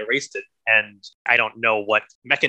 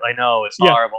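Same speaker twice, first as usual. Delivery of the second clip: loud, put-on delivery with zero feeling; 5 dB louder than usual. Retelling how a character in the movie says the line: imitating an incredibly unemotional delivery. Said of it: "in such an incredibly unemotional".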